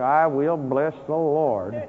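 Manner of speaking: acted clenched-teeth voice. Acting out how the prisoners did not praise God: imitating gritted-teeth praise. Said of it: "they weren't praising God but through gritted teeth".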